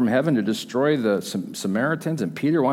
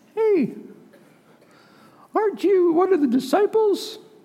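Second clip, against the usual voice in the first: put-on squeaky, very high little girl voice. Telling the story of Peter, voicing a little girl's question: best little girl voice. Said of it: "That's my best girl voice".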